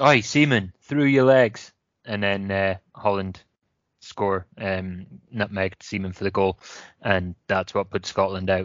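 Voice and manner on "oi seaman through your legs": put-on shout called out across a distance. Retelling a manager shouting toward the pitch: imitating a shout. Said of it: "he shouts".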